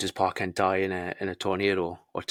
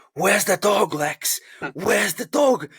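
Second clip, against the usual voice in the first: put-on furious, livid screaming, very high-pitched; 13 semitones higher, 6 dB louder than usual. Retelling a scene where a man storms into Lex's office, retelling a livid scream. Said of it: "he's absolutely livid, and he's screaming".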